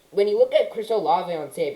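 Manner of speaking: voice breaking, cracking mid-phrase. Praising a draft prospect's speed, the speaker's voice cracks: voice cracking. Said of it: "excuse the voice crack".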